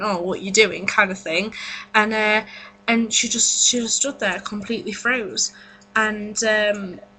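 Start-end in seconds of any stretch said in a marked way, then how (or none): none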